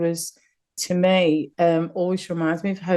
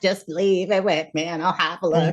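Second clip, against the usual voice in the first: acted cartoonish monster voice. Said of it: "her voice sounded like".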